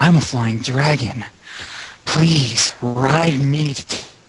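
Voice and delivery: slow, drawn-out, smoldering voice. Voicing the character Lucas, cut off mid-line: smoldering Lucas voice. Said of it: "I do this smoldering voice".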